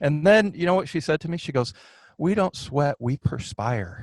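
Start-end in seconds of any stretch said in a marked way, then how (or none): 2.2-4.0 slow, sweet, charming little voice. Retelling a woman's reply, quote her in a charming little voice. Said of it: "In this charming little voice".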